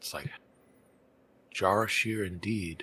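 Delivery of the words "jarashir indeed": muttering under breath, quieter. A character looks up where a companion just vanished, muttering under breath. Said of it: "will mutter under their breath".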